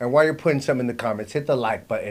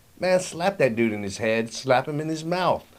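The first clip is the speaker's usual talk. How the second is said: ordinary delivery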